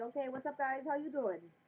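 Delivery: put-on slight Spanish-accented voice.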